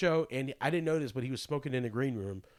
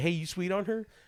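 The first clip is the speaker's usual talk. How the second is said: strong, pitched-up put-on Southern accent; 5 semitones higher than usual. Retelling what a friend asked at a show: imitating a Southern accent. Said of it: "He's, like, real Southern".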